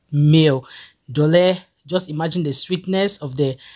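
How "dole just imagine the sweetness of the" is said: normal talking voice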